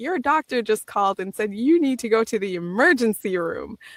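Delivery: normal talking voice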